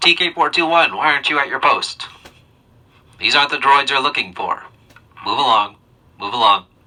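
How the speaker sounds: voice changed through amplifier. Showing how a helmet voice amplifier sounds: changed voice through helmet amplifier. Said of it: "depends on how you change your voice".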